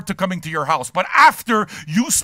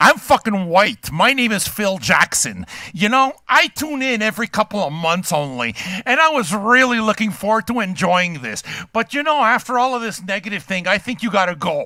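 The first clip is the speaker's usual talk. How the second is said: ordinary talk, nothing marked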